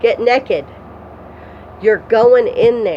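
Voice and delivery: mock-angry put-on tone. Retelling a woman ordering the speaker to undress, imitating her angry command. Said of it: "She she got mad at me".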